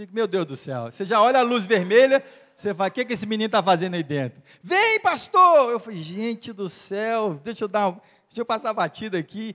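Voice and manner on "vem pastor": put-on very high, repeated shout. Pastor retelling a man calling him from inside a brothel, imitating someone shouting. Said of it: "E ele gritando e gritando".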